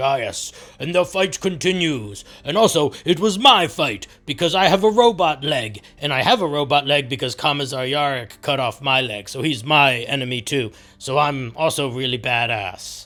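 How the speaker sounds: big, mocking orc storyteller voice. Retelling what the big orc says to the little orcs: imitating the big orc. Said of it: "the big orc looking at the little orcs, and he's like".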